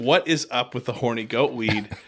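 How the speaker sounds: usual speaking voice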